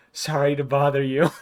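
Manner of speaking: whispered speech. Speaker acts out closing the door on sleeping people, whisper. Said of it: "I'm just gonna whisper".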